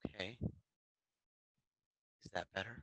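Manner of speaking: very soft voice, barely above a half-whisper. Checking if the others can hear now: sounding like half-whispering. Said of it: "You still sound like you're whispering".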